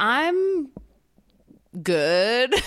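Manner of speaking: hesitant halting tone. Podcast co-host answering a greeting at the start of the episode, hesitant. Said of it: "That hesitation in your voice".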